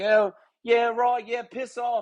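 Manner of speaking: put-on Australian accent. Imitating the head golf pro telling someone off: imitating an australian accent. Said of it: "So he's got the great accent".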